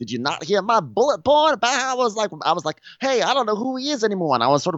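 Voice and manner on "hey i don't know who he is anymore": mock angry delivery, higher. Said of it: "angry 'cause, like, I learned how to".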